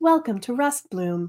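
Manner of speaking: calm, soothing synthetic assistant voice. Describing a place's welcome message, soothing AI-style voice. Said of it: "very, uh, soothing, uh, AI style voice go".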